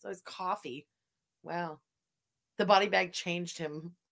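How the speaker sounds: plain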